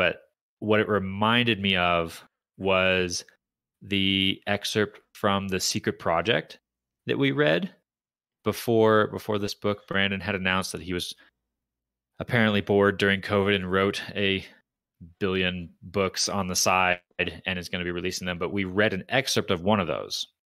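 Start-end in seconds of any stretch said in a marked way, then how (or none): 0.0-6.6 slow, careful, deliberate delivery. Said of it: "I'll talk slowly".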